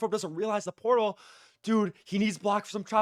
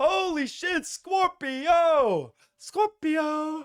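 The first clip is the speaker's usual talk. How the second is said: ecstatic, high, excited sports caster screaming; 8 semitones higher than usual. Commentator reacts as game five hangs at one apiece: screaming excitedly. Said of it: "because I'm screaming a lot".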